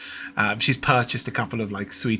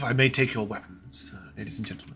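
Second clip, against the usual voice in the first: put-on butler manner; 4 dB quieter than usual. Narrator voicing the butler who greets the party at the inn door, butler character voice. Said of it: "you're greeted by a butler at the door".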